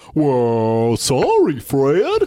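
"well" high, swooping, and drawn out. Trying out an impression after asking to do a Barney: Barney Rubble voice. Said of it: "he kinda goes".

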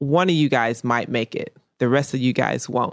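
ordinary delivery

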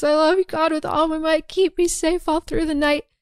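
high-pitched, tearful mock sobbing. Retelling a story in which a woman, made to kneel, prays to God: imitating sobbing prayer. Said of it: "And she's really sobbing".

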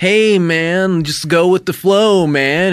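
loose, easygoing, wild, laid-back hippie voice. Acting out a wild hippie character in a made-up movie: wild hippie voice. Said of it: "Kind of like a wild hippie who's like".

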